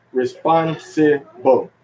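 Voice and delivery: responsible drawn out slowly, spon stressed. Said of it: "let's say".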